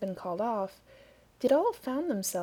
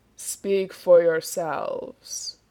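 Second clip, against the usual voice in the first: deep, terrible, low booming voice; 4 semitones lower, 8 dB louder than usual. Narrator reading Death's reply to War and the others: deep, terrible voice. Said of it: "said a deep and terrible voice".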